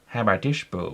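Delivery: spoken out of the side of the mouth. Describing Seth MacFarlane voicing Peter, does Peter Griffin voice, side of mouth. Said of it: "talked down the side of his mouth".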